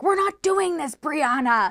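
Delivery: stern scolding yell. Retelling how a police officer yelled at a renter: imitating an officer yelling. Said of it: "yells at her like a child".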